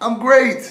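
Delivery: very high-pitched, very loud shrill yell. Acting out a man in a pit answering: acting out a scream from a pit. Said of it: "The guy screams up".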